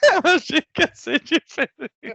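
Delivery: high-pitched voice, laughing through the words.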